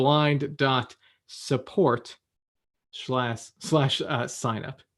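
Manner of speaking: very slow, spaced-out, spelled-out delivery.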